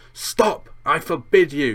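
high, loud, panicked yell. A man accused of keeping something from a boy for years, yelling in panic. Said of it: "Yelled Uncle Vernon in panic".

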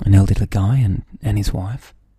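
low, loud, creepy voice. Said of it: "Why'd you say it so creepily?".

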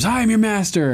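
high-pitched, panicked scream. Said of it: "he screams".

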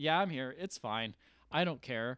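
ordinary talk

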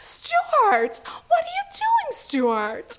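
very high, slow, sing-song calling voice. Speaker doing an impression of Stewart's mom calling him. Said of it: "my impression of stewart's mom".

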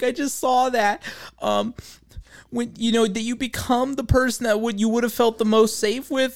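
acted, pitched way up, choked-up voice near tears. Retelling a girl's clip about a TikTok saying: imitating someone choked up. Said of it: "choked up and she's like".

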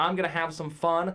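ordinary delivery

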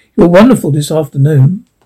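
usual speaking voice

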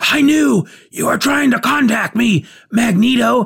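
forceful stage whisper. Reading a comic character's line aloud: whisper with exclamation points. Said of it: "me trying to whisper with exclamation points".

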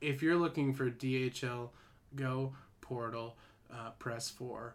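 soft, lifeless, despairing put-on robot voice. Retelling a phone menu's voice after it changed, imitating a depressed phone robot. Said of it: "sounds like a dude about to kill himself".

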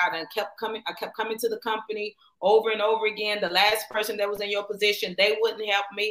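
normal talking voice

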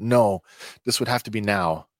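usual speaking voice

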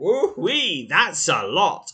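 sarcastic voice. Reacting to a result while playing: sarcastic. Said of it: "I am being sarcastic".

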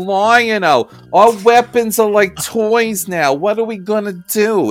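put-on New York accent. Mocking a cartoon character's line reading, doing Wile E. Kit's New York accent. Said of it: "sound like she was straight from New York".

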